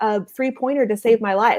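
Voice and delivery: ordinary talk, nothing marked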